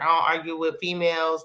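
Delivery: ordinary delivery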